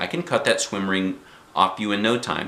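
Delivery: ordinary delivery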